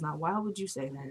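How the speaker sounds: very quiet, low, hushed mutter under the breath. Retelling her aside after he walks away: imitating a low aside. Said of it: "it was actually extra low".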